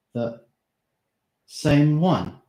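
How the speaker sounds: shocked, quavering, trembling, slow and drawn out. Narrator reads his question about Madame Octa in a slow, trembling voice. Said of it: "He asked in a slow, trembling voice".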